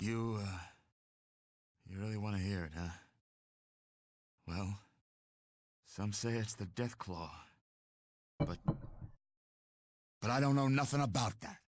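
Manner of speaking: fearful voice. Answering a question about what it is: sounding scared. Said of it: "You sound scared".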